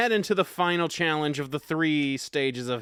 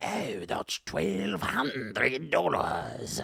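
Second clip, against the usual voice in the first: spooky put-on Scottish ghost accent, very slow, drawn out; 4 dB quieter than usual. Describing a pull-string toy that announces money amounts, in a creepy scottish ghost accent. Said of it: "in a creepy, like Scottish ghost accent".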